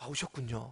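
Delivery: soft, calm voice.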